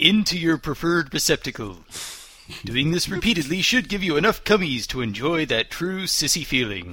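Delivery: put-on tv advertisement announcer voice. Reading a text aloud to laughing listeners, commercial announcer voice. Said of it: "Sounded like a commercial".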